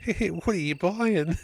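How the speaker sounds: put-on very high little-girl voice. Retelling how a nine- and six-year-old asked a question, imitating little girl voice. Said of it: "little girl voices going".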